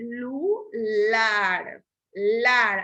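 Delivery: slow celular with LAR stressed. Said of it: "Ahí lleva el acento".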